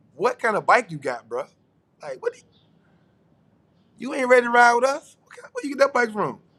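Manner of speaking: derisive laughing. Retelling how group riders laugh at a newcomer's bike: imitating people laughing at someone. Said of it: "people are laughing at you like".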